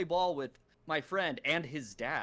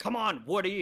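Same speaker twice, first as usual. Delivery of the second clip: voice suddenly raised, louder; 4 semitones higher than usual. Retelling a movie scene: imitating Tim Allen raising his voice. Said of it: "raises his voice".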